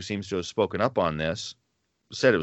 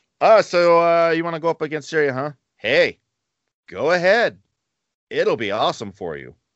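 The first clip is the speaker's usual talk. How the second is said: high, sarcastic, fake-sounding encouraging tone; 7 semitones higher than usual. Retelling how the prophet Micaiah answered King Ahab: imitating a sarcastic prophet. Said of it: "something about the way he said it tipped off".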